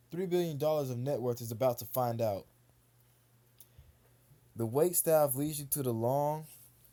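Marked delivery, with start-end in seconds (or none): none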